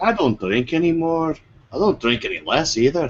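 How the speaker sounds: put-on Scottish accent. Making a joke out of character: scottish accent. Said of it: "that was a Scottish accent".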